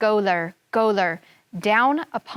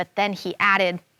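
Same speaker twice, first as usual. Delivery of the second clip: plain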